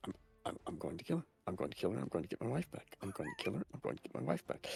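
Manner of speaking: barely audible, very quiet muttering under the breath. Describing a character who sets off after someone, imitating muttering under breath. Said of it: "she's just muttering under her breath".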